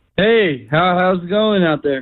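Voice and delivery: cheery, happy, upbeat voice. Radio show guest greeting the hosts on the line, sounding happy. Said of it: "You sound happy".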